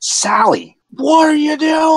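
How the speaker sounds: troll voice yelling out.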